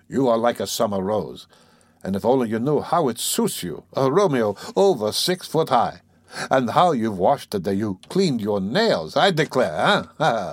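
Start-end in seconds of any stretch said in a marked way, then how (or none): none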